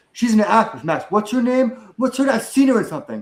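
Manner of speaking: loud, insistent blurt. Retelling how the speaker's dad loudly pointed out someone in a restaurant: loud talking. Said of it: "he loudly points at someone and goes".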